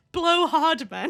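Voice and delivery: speaking through laughter. Trying to deliver a joke without cracking up: laughing while talking. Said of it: "I need to say this without laughing".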